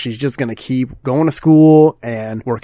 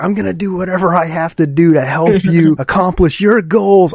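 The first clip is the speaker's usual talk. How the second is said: put-on screaming, higher; 5 semitones higher than usual. Retelling an anime scene, imitating Kazuya screaming. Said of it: "Kazuya screams".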